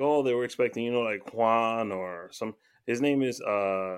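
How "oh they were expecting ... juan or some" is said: ordinary delivery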